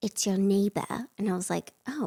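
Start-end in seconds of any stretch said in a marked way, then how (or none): 0.0-0.9 put-on very stern, strict, severe British accent. Recounting a knock at the door, imitating the woman's stern British accent. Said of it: "she had like a very stern British accent".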